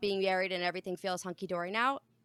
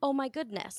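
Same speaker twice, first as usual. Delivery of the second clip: put-on calm, sweet, restrained, sugar-coated patient tone; 3 semitones higher, 4 dB quieter than usual. Recounting what they told him instead of swearing, retelling a calm reply. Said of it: "Did you hear me say it calmly?".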